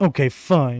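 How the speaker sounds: pouting, sulky sword character voice. Voicing the sword as it gives in: pouting sword voice. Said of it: "the sword kinda pouts".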